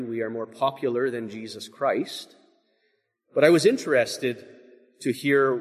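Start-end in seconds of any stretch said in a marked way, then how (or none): none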